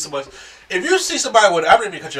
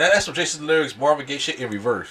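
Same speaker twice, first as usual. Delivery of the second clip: ordinary delivery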